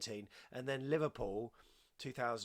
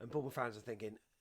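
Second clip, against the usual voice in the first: ordinary talk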